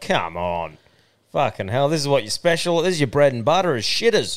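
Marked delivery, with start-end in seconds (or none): none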